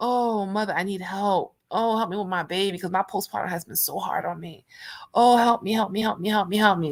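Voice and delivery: crying, tearful, pleading voice. Retelling a special prayer said at the lake: imitating own crying prayer. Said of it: "I be crying".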